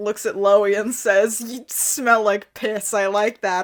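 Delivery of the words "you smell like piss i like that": ordinary talk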